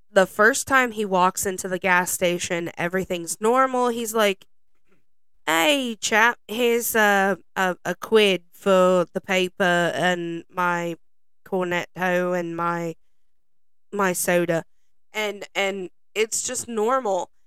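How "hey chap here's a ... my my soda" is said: slow, unhurried put-on British accent. Retelling a film character buying a paper: put-on british accent. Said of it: "British accent".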